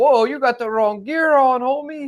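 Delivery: put-on Mexican accent. Retelling a guy who approached him while waiting for a ride; imitating a Mexican accent. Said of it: "He had like the Mexican accent".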